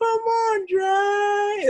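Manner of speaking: very high, squeaky yell, "Dre" drawn out. Act out the coach yelling at Dre from the background, imitating Coach T's high-pitched yell. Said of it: "Like in his high pitched voices".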